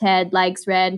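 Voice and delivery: put-on robotic voice, read in storybook style. Reading ted likes red in the day's silly voice: robot voice. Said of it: "I'm going to read Ted Likes Red in a robot voice".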